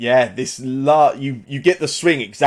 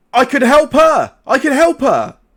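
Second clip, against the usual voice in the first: very high, loud, swooping, drawn-out cry; 14 semitones higher, 6 dB louder than usual. Voicing a guard shaking at his cell door, crying out. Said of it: "he just cries out and he goes".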